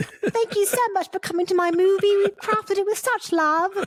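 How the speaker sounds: very high British woman voice, like an actress. Mocking a British woman from interviews, doing a high British woman impression. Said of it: "Her voice is very high and up here".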